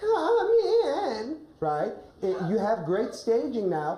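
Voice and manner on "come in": put-on very high, weak, feeble old-lady voice. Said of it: "a high-pitched voice".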